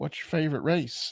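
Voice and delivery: put-on Southern American accent. Retelling a viral clip, imitating a southern guy. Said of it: "Southern guy being like".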